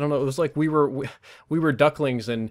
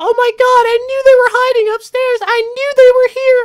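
put-on shrill, very high, loud little-kid voice; 12 dB louder than usual. Retelling an enemy coming up the stairs, quoting him in a little kid voice. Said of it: "Just like this little kid".

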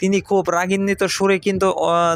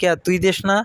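plain

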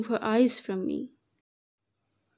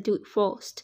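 ordinary delivery, nothing marked

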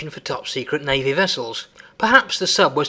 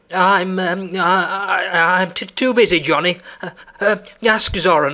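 frightened, higher and slower; 4 semitones higher than usual. Narrating a story, voicing one character's reply to another, in a frightened voice. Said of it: "said Zip in a frightened voice".

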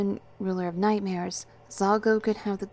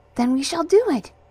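bright, cheerful, high-pitched, very loud; 8 semitones higher, 9 dB louder than usual. A woman replies to the narrator's request for help, cheerful. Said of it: "she said cheerfully".

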